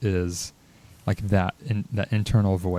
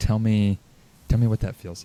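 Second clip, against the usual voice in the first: mock soft, gentle whisper. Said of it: "softly whispering in my ear".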